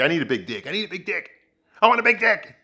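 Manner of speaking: mild wailing cry, rising, like mock screaming. Retelling a scene where a woman storms into screaming: imitating someone screaming. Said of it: "she starts screaming".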